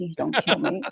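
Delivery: acted, frightened, hushed, pleading whisper. Retelling hiding in a telephone booth as a scared child: imitating a frightened plea. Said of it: "that scared the living shit out of me".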